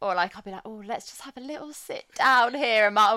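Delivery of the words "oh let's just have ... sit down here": mock whining, higher and louder. Retelling complaining about tired feet at Disney: imitating own moaning. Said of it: "I start to moan about".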